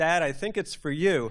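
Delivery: mock blasé, unbothered tone. Retelling answering a prank phone call as a child: imitating own blasé reply. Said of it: "just completely blasé".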